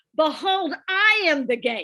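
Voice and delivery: booming very loud voice. Retelling words spoken into a microphone to the women present, in a really loud voice. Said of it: "in a really loud voice".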